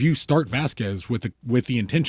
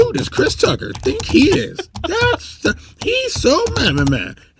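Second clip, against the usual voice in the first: very high, loud, swooping sing-song troll voice; 6 dB louder than usual. The speaker demonstrates his internet troll voice right here: internet troll voice. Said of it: "your internet troll voice sounds like King Kai voice".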